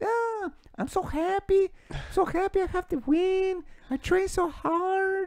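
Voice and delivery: very high, slow, squeaky voice. Imitating a fighter's post-fight interview: Marlon Moraes impression. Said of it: "Mickey Mouse on the microphone".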